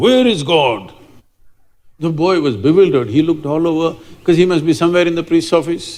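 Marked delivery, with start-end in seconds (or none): 0.0-0.9 sudden, grand, booming delivery. Telling a story where a priest suddenly asks a boy a question: booming voice. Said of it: "with a booming voice he asked".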